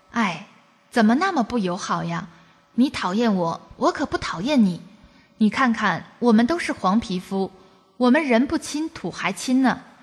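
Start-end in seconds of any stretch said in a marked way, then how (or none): none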